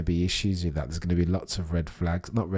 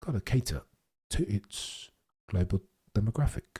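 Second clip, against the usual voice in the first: put-on broadcaster tone, read like a broadcaster; 3 semitones higher, 3 dB quieter than usual. Repeating a remark for viewers: Will Buxton tone. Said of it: "I feel like I've just said that in a Will Buxton tone".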